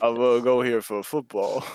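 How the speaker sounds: put-on deep voice. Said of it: "talking in a deeper voice on purpose".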